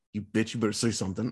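mock pissed-off tone, low and fast muttered. Retelling how people react when Angela stays silent, acting out pissed-off folks. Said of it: "gets folks so pissed".

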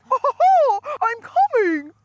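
squeaked out, high and swooping. Joking about being Mickey Mouse in bed, the speaker does a Mickey Mouse voice. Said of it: "doing the Mickey Mouse voice".

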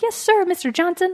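peppy, very high-pitched. Describing a game's story, the speaker quotes Caroline answering her boss, peppy high voice. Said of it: "she's got like a very peppy high voice".

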